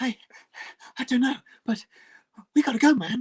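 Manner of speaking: winded, out-of-breath, high-pitched voice. Joking about an actor always sounding winded: breathless Mark Wahlberg impression. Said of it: "Mark Wahlberg is always out of breath".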